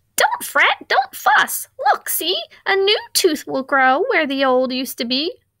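high squeak that swoops in pitch. Reading a picture book aloud, Mouse speaks to Bear: squeaky Mouse voice. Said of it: "Mouse squeaked".

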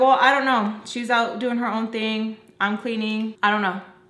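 ordinary talk

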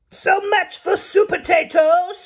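high, screeching voice. The pea, cornering Supertato at the cakes, screeches. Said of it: "screeched the pea".

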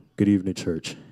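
deep, booming baritone, preacher-style. Imitating a missed church member greeting the church: Brother Zander's baritone voice. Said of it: "even his baritone voice".

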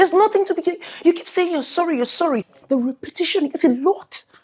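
very high, very loud, shrill, agitated, worked-up outburst. Franca answering an apology while being told to calm down, agitated. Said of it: "calm down".

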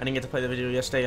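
talking very fast, rattled off.

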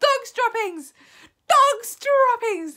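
shrill, very high, very loud shouting. A whole assembly of witches takes up the cry together; shouted. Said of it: "they shouted".

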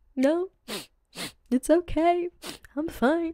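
very slow, high, teary, drawn-out crying. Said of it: "crying and making a scene and yelling".

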